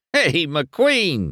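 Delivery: high, mocking, needling, jeering taunt. Reading a story aloud, one character taunts another: taunting. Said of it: "he taunted".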